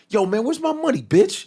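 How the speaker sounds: put-on accent from Oakland. Asking someone what they were told to say, act out the line in a put-on Oakland accent. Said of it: "What did they tell you to say like this?".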